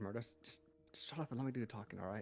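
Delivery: whispering. Voicing a character who tells Murdo to let them talk: whisper. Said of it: "kinda whispers".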